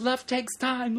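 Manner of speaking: mock maniacal screaming. Retelling shouting a request at a woman walking away, retelling own frantic scream. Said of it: "I'm just screaming like a maniac".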